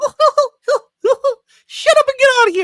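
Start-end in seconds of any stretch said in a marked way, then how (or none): 1.7-2.7 very high, loud, fast, squeaky put-on cartoon-mouse yell. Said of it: "me doing my best Mickey Mouse impression".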